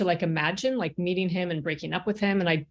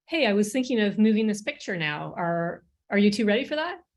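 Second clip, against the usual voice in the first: put-on gentle voice suited to children. Retelling speaking to two children, in a voice suitable for a child. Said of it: "in a voice suitable for a child".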